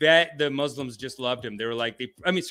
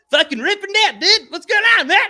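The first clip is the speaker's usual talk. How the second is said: very high, loud, revved-up dude voice; 8 dB louder than usual. Imitating how the comedian coming tomorrow talks: imitating a friend's voice. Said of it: "he talks like that".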